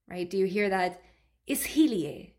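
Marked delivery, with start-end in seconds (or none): 1.4-2.2 stress on middle syllable hi in ishilie. Explaining pronunciation of a phrase, stress on hi in ishilie. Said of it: "There's like a emphasis on he".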